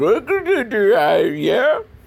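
dopey cartoon voice, very high pitch, very slow, drawn-out. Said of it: "I'm not very good with impersonations".

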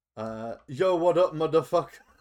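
very loud put-on Japanese accent in English. Retelling a story, the speaker voices a Japanese man: Japanese man's best English voice. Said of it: "in the Japanese man's best English voice".

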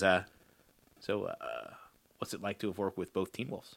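hushed whispering voice. Telling how one man pulls another aside at a first meeting, retelling a whisper. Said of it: "he whispers into his ear".

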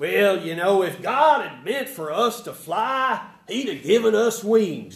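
put-on North Carolina accent. Retelling what a bishop once said, in a nice North Carolina accent. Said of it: "we have to say this in a nice North Carolina accent".

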